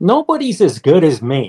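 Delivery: nice-sounding, sing-song, playfully sarcastic delivery. Quoting a doctor's answer to why he doesn't get it done: mock-sarcastic, said nicely. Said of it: "as a sarcastically funny".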